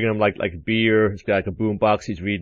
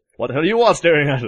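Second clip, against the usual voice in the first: put-on roaring shout; 6 semitones higher, 4 dB louder than usual. Describing a man turning on everyone watching him: retelling a roar. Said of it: "just roars".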